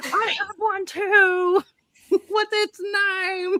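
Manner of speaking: very slow holler, stretched and drawn out. Retelling calling out a window to a dog owner: retelling a scream. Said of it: "So I'm screaming out the window".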